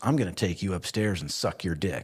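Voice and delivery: pushy, aggressive, forceful in-your-face delivery. Retelling what she said as he leaned in: imitating an aggressive tone. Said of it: "And very aggressively".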